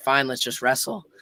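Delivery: plain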